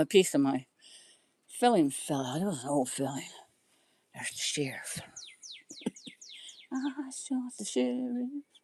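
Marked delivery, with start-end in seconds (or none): 4.1-8.3 soft, hushed whisper. Mid-story about a dentist, the speaker gets distracted and starts whispering. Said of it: "I'm whispering like you can hear me".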